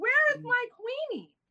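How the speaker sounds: mock crying wail, pitched very high. Retelling being down there alone late at night, imitating own wailing. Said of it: "I swear I said it".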